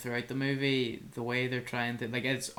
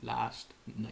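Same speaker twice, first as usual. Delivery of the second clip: dramatic pause before "last night", quieter; 5 dB quieter than usual. Repeating own earlier words for the other speaker, dramatic pause before "last night". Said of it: "I think it was for dramatic effect".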